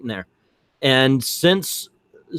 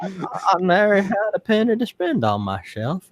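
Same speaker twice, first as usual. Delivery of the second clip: put-on old man voice, higher; 6 semitones higher than usual. Telling nostalgia stories in a put-on old man voice. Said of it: "Not the old man voice".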